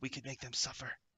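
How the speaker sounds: hushed, confiding, secretive half-whisper. Voicing the imp Blasadriet as it half-whispers to Rahl: Blasadriet half-whispering. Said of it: "whispers to Rahl".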